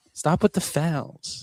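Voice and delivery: very slow, dragged-out voice. Joking that a player talks to himself in the mirror: imitating the player's voice. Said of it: "You gotta do his voice".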